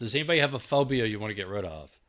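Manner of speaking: usual speaking voice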